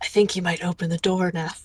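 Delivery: theatrical stage whisper to the room. As the professor behind the door, the game master speaks in a stage whisper. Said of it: "stage whispers like".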